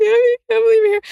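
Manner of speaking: shrill, high, loud tearful crying. Retelling finding a visitor at a party: imitating own past crying. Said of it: "I'm, like, crying".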